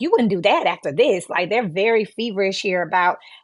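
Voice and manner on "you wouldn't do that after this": very nasty, mean, threatening tone. Acting out a blackmailer's words in a card reading, imitating a nasty tone. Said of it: "someone speaking to you in a very nasty".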